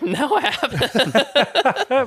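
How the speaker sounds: very high, manic, almost insane acted laughter. Retelling how he answered whether he'd had a flat, imitating insane laughter. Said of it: "almost insane laughter of like".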